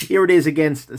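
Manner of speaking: high voice, words broken up by laughter. Starting a size comparison after making a joke: laughing while talking. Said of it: "I'm still laughing at my own joke".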